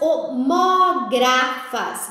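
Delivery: homógrafas, each syllable stretched out very slowly.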